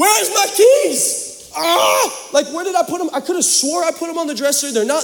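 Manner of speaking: mock freaking out, very high and frantic. Retelling running around the house looking for lost keys, retelling frantic panic. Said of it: "I'm like freaking out".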